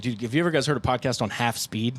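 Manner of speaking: plain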